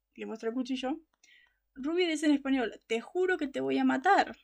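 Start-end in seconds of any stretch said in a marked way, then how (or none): none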